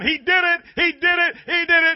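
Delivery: very high, drawn-out hollering scream, repeated over and over. Retelling her finding groceries left on her porch: imitating her screaming. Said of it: "she's still going".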